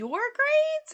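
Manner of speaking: shrill, very high-pitched, very loud pitch jump. Retelling a conversation, quoting a woman's reply, imitating her high-pitched voice. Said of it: "her voice gets like really high pitched".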